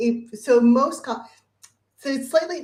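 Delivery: high, halting stutter with stumbling, broken-off starts. Asked which techniques he finds most useful, he begins answering, stuttering. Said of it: "I'm sort of stuttering on this a little bit".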